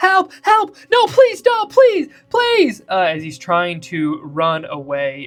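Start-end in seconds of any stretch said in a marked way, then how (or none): 0.0-2.8 panicked pleading scream, much higher and louder. Voicing a figure squirming out from under someone's feet to run away; screaming for help. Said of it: "and he's screaming. He's like".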